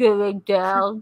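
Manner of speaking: put-on slow, droopy cartoon voice. Trying the Droopy dog line again: Droopy dog impression. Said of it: "Yes, my Droopy dog".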